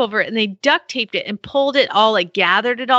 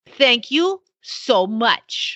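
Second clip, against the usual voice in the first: slow, drawn-out delivery in a different voice. Reading a listener's message aloud in the writer's voice: imitating Lorene's voice. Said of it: "you gotta read it in her".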